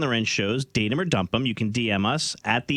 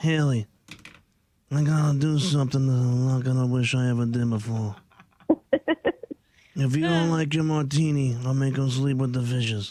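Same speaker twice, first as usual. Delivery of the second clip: mob boss voice. Joking that a date might be a mobster: Marlon Brando Godfather voice. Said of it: "It's a pretty good Brando".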